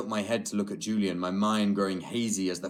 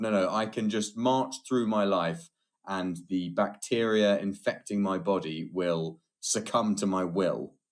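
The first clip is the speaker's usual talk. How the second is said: ordinary delivery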